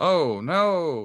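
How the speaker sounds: high, loud, heavily sarcastic, long drawn-out "oh no". Tipping over a shelf, the speaker says this in a very sarcastic tone. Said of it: "in like a very sarcastic tone".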